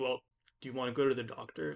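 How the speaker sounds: mock-condescending, put-on condescending tone. Retelling how their dad reacts when they get hurt, mimicking dad's condescending tone. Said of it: "he does like a very condescending tone".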